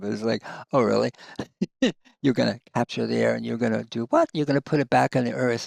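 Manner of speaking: quick speech broken up by laughter. A speaker apologizes for laughing while making a point, laughing while talking. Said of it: "I'm sorry I'm laughing".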